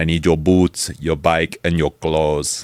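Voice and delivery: mock bone-dry, flat, level deadpan. Retelling a movie scene, quoting a biker demand: imitating a deadpan delivery. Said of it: "gives him the deadpan".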